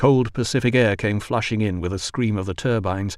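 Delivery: plain reading voice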